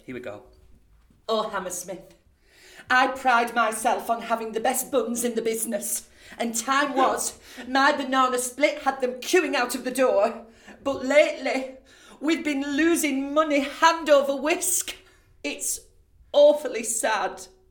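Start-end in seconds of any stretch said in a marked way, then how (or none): 1.3-17.4 very high, loud, drawn-out northern English panto dame voice. Performer delivering the dame's lines to Hammersmith: northern dame Sarah voice. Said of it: "I hark from the north of England, so my Sarah is a northern dame, ... so my Sarah is a northern dame".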